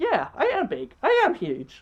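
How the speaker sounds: very slow, high, sing-song, delighted voice. Retelling a movie scene where Littlefoot answers the small ones: imitating Littlefoot, so happy. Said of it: "Littlefoot is so happy".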